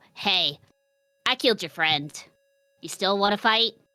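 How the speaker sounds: fast, rattled-off goblin-style creature voice. A player's character copies a goblin's voice while speaking to it, mimicked goblin voice. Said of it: "will copy goblin voice from this guy".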